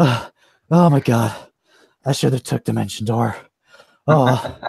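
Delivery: breathless, panting voice, out of breath. Voicing a professor who ran out of the tower: panting, out of breath. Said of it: "he's, like, panting".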